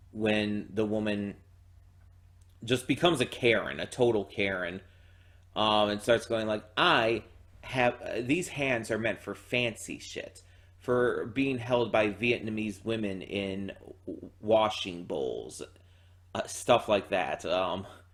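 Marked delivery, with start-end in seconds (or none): none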